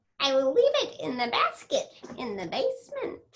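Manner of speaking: mean witch voice with wide swooping pitch. Showing off one of the bad-guy voices the speaker loves doing: Christy Corn Pop mean witch voice. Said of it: "like the Mean Witch Christy Corn Pop".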